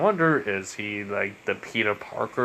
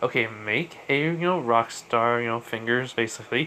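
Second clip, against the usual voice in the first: ordinary delivery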